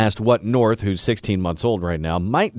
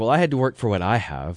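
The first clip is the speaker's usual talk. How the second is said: plain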